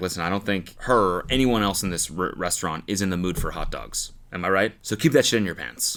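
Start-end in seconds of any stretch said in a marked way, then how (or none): none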